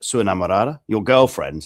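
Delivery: put-on dry, flat, expressionless deadpan delivery. Speaker acts out a line said to two girls in Brazil, retelling a deadpan line. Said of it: "said a bit, little bit deadpan".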